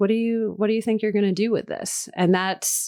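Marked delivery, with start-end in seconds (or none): 0.0-2.1 very gentle, kind, careful voice. Retelling how a supportive partner asked about the work: imitating a gentle question. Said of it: "he just very gently asked".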